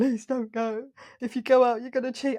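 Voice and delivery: tearful, pleading tone spoken through sobs. Retelling a man on the bottom step begging the speaker to stay, imitating his sobbing. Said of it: "sobbing, going".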